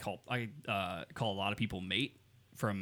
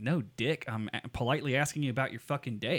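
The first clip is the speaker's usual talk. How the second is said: usual speaking voice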